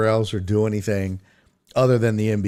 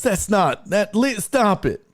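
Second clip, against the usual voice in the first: mad, very high outburst, abruptly broken off; 9 semitones higher than usual. Retelling Nora's reaction to the impression: imitating Nora getting angry. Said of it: "She gets so angry".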